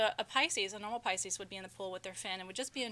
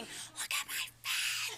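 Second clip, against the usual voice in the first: mock screaming, very slow and stretched out; 7 semitones higher than usual. Retelling how her daughter screamed at people by the pool: imitating daughter screaming. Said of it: "she's screaming".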